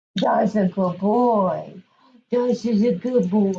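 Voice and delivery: funny, silly, goofy voice. Praising the dog after he touches a hand, in a very funny voice. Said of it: "I use a very funny voice to reinforce him".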